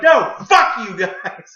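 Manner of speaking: slow, very loud, high, shrill, drawn-out scream. Retelling a call from the cable company: retelling a scream. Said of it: "I just screamed at her".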